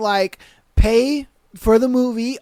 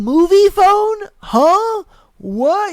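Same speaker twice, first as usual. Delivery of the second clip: mock bewildered, clueless, baffled kid voice; 8 semitones higher than usual. Imitating kids who have never heard of Movie Phone: imitating confused kids. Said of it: "you probably are like".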